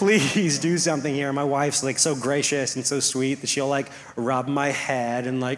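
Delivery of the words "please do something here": put-on crying, pleading voice. Speaker on the ground recalls pleading with their wife, retelling a crying plea. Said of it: "I'm crying".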